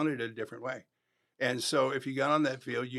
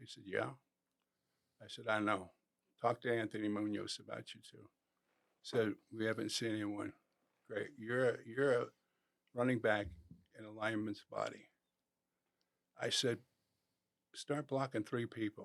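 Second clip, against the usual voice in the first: soft, low murmur. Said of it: "talk right behind their ear".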